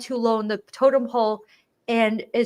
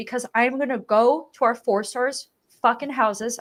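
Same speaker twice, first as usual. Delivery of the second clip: ordinary talk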